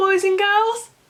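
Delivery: high, slow sing-song calling voice.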